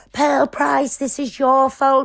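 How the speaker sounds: put-on screaming, blaming outburst. Retelling what a woman screamed in a video: imitating someone screaming. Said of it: "when she was screaming out of the video".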